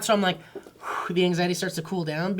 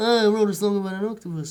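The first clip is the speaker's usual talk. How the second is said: put-on Liverpool accent; 4 dB louder than usual. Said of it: "He sounds".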